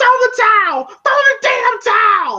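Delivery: shrill, very high screaming. Retelling a fight scene, imitating a trainer: Tony Duke screaming. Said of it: "Tony Duke is screaming".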